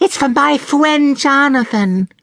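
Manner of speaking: put-on very high, slow, deliberate little-girl voice. A young girl answers Sarah in the shop, in a very high voice. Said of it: "said the girl in a very high voice".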